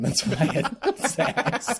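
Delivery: high, slow laughing while speaking.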